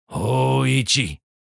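grim, rough, creaky voice. A voice calls the blind man's name a second time: grim call. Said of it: "grimly called the voice a second time".

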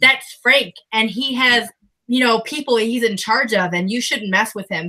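ordinary talk

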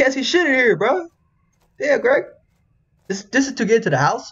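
high-pitched yelling.

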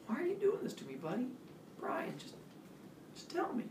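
hushed, baffled, bewildered, confused whisper. A man questions Brian, trying hard to understand him: quiet, confused. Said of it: "he said quietly, like he was trying hard to understand".

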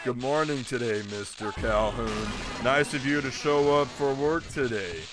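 depressed put-on character voice. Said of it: "he just sounds so depressed".

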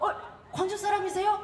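excited, gushing TV host voice, high and loud.

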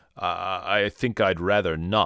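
plain

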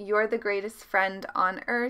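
usual speaking voice

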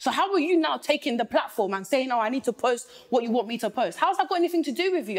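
angry, fired-up, indignant heated outburst. Complaining about the man the speaker loves, shouting. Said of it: "I'm sorry that I'm shouting".

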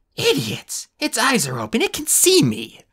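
shrill, very high screeching outburst. Reading a story aloud, voicing Opal as she sees the clone's eyes open: screeching. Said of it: "Opal screeched".

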